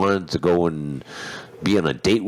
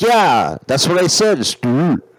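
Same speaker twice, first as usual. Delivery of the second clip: very high, loud, insistent put-on French accent; 11 semitones higher, 6 dB louder than usual. The speaker quotes a woman he could not understand: imitating a french accent. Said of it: "like in a French way".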